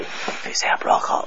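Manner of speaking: said quietly in a soft whisper.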